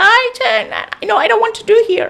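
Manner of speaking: comic, very high-pitched silly giant voice. Showing how a giant in comedies talks and makes everyone laugh: imitating a comedy giant's laughable voice. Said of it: "he speaks like this".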